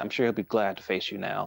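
ordinary talk

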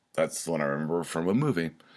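rushed, fast rattle-through. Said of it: "That's why I'm talking really fast".

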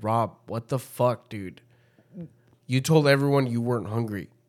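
put-on heated, furious delivery. Retelling what was said to Rob in the car: imitating own heated anger. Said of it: "I'm fucking heated".

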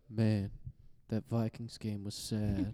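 put-on quiet mumbling monotone. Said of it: "Does he talk like that?".

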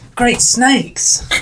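loud, high, enthusiastic character exclamation. Told by a friend to get into character, the speaker exclaims the catchphrase: in character. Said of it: "Get into character".

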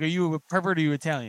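ordinary delivery

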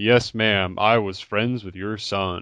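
put-on over-the-top, thick American accent. Quoting an actor's line from the movie: Dan Stevens' over-the-top American accent. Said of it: "it's just over the top".

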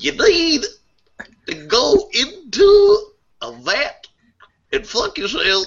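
drawn out, high, with big pitch swoops. Telling a dude to fuck his clone, as asked: Bill Cosby voice. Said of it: "use your Bill Cosby voice".

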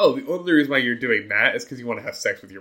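cocky, smug know-it-all delivery. Imitating a college freshman fresh from a first Psych 101 class: imitating a know-it-all college freshman. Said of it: "I'm gonna be like a college freshman who just took their first Psych one oh one class".

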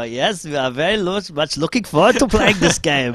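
put-on German accent, very loud and very high. Speaker retells almost answering a german man with a put-on german accent. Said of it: "he's putting on a German accent".

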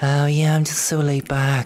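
breezy put-on phone voice. Mocking how a friend sounds in a recording, Beck's put-on casual phone voice. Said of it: "a phone voice".

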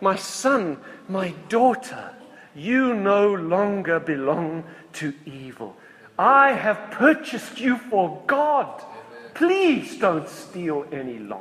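kindly, loving fatherly voice. A preacher contrasts Javert's way, then voices Myriel's loving-father tone. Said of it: "the voice of a loving father".

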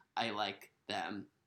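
slow, soft sarcastic tone.

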